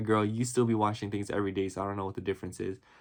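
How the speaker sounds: normal talking voice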